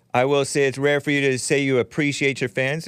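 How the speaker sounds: normal talking voice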